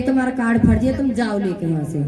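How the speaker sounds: ordinary talk, nothing marked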